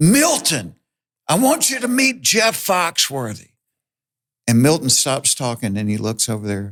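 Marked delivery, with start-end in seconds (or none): 0.0-3.5 very high, animated, swooping holler. Retelling an introduction shouted across a pool: imitating someone hollering. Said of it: "he hollers".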